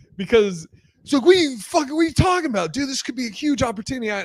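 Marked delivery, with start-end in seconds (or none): 1.2-4.1 mock very high-pitched, rushed, pissed-off outburst. Retelling his reaction when the two of them turned the offer down, imitating someone angry. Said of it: "he was so pissed".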